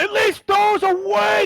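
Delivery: very high, very loud, upward-projected screaming yell. A game master voicing the man inviting Legacy to a morning family meal, screaming to the rafters. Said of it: "He screams to the rafters".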